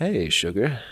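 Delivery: flirtatious, soft. Rehearsing a greeting line again after being stopped: flirtatious. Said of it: "I flirt".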